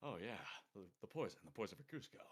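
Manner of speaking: even-paced, deep, very soft voice, barely above murmur. Explaining how to craft voices, speaker demonstrates a Patrick Warburton type voice. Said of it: "a Patrick Warburton type voice".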